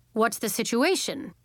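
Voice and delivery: ordinary delivery, nothing marked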